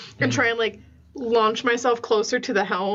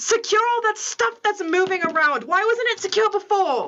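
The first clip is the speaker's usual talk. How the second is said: barked shouting, pitched very high; 11 semitones higher than usual. Taking hold of the helm, the captain is shouting orders at the crew. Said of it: "just shout some orders".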